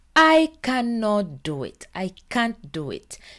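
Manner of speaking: ordinary talk, nothing marked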